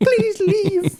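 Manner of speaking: very high-pitched, girlish put-on voice. Retelling an awkward exchange, the speaker voices her reply in a girl voice. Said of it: "I love [name]'s uh, girl voice".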